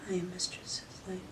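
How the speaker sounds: meek, tiny, timid mousy voice, very quiet. Mistress shows her submissive how not to say it: timid little-mouse voice. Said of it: "I don't want you to say it like a little mouse".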